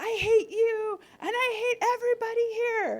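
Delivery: very high, very loud, shrill yelling outburst. Retelling her child's meltdown at the doctor: imitating her child yelling. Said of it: "she started yelling too".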